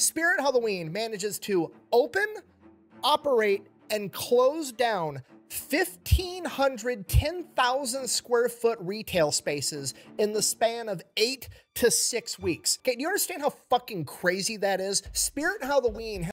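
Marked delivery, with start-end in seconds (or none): 0.0-12.8 slow, unhurried, deliberate, each part set down. Speaker repeats a point for a listener who isn't following, saying it slower. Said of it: "I'm gonna say that a little bit slower".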